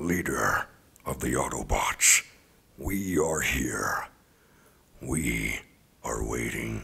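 very loud, booming robot voice at full volume. Opening an impressions reel for your consideration, Optimus Prime voice. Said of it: "My name is Optimus Prime".

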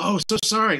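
put-on Japanese accent. Retelling an actor's read-through reply: imitating Long Duck Dong's Japanese accent. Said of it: "he did the accent".

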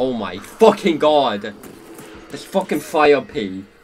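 irritated, pissed-off cursing outburst. Playing a game and getting hit by the enemy team's fire piece, irritated outburst. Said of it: "this fire piece is actually starting to piss me off".

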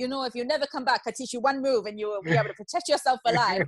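bad, terrible, high-pitched, put-on Serbian accent. Quoting the Serbian man who taught the speaker's first session, in a terrible Serbian accent. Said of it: "but a terrible Serbian accent".

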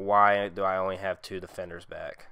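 ordinary talk

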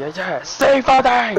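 pretend yelling. Joking about what should have been screamed into the microphone: mock screaming. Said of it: "I shoulda screamed in the microphone".

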